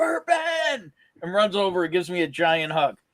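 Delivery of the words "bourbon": high, loud yelled call. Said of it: "just yells out".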